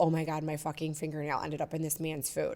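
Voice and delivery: mock frantic, mortified, hushed panic. Telling a story about a dinner mishap, the speaker is retelling freaking out. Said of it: "So I'm freaking out like".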